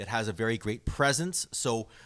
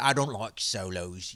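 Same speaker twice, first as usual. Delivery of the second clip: put-on slow, drawn-out Irish accent; 2 semitones lower than usual. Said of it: "That's the best Irish accent I get".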